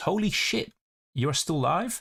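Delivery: put-on American accent, high, slow. Reading a viewer's chat message aloud during a long live stream: put-on American voice. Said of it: "I don't know why I said it in an American voice".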